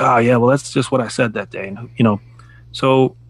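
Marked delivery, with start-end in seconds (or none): none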